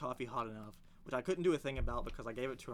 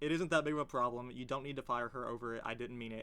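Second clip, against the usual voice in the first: ordinary talk, nothing marked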